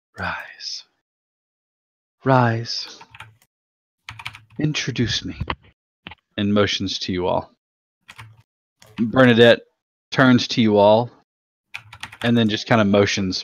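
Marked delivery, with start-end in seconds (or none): 0.2-5.4 slow, soft whisper like rustling leaves. Narrating a scene, a figure with a hand on Bernadette's head speaks: soft voice like rustling leaves. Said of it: "you hear a soft voice, almost a rustle of leaves".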